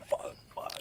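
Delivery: hushed, whispered gasp, almost no voice.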